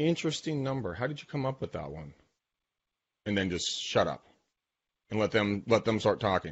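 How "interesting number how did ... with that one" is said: deadpan, dead straight, low-key delivery. Describing how to answer a lowball offer in negotiation, retelling a deadpan reply. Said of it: "I look at them deadpan in the face".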